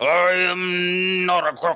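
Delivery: very slow, high, stretched 'am'. Offering to do a Nixon after a bad one was mentioned: Nixon impression. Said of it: "I could do a Nixon".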